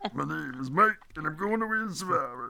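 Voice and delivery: fake rough, gravelly voice. Picking Survivor contestants and imitating one of them: Mike's gravelly voice. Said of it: "with his grovelly voice".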